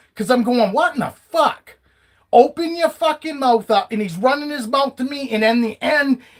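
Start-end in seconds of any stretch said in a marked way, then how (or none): 0.8-1.8 high-pitched, put-on, angry, pissed-off outburst. Retelling a clash with a bus driver: imitating own angry outburst. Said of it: "now I'm fucking pissed".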